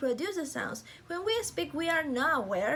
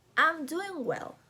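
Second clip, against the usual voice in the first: voice drops away, falling tune at end on "well"; 3 semitones higher than usual. Teaching intonation, giving an example sentence; falling intonation at the end. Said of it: "the voice falls at the final".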